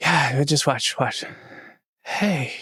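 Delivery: put-on sick, unwell-sounding voice. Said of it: "you don't sound so great".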